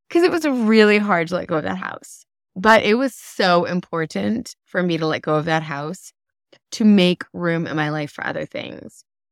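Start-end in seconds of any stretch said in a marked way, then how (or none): 0.2-2.3 close to crying, teary, holding it in. Speaking about letting go of a house, on the verge of tears. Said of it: "I'm on the verge of tears".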